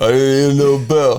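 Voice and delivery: put-on boxer voice. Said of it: "You gotta say it in a Rocky voice".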